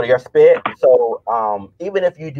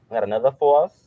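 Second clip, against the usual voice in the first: suddenly slipping into a New York accent; 3 dB quieter than usual. Going over quiz answers, the speaker slips into a New York accent. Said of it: "I somehow some way get a New York accent".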